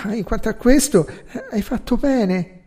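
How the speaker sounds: embarrassed, awkward, slightly high, with a touch of cheer. Narrator reads a man replying to a woman's account; embarrassed, hint of cheer. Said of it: "In tono imbarazzato, venato da un briciolo di allegria".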